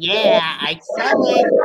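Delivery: low, slow, drawn-out hand-puppet character voice. Voicing a puppet in a role play: SpongeBob voice. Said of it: "SpongeBob puppet says".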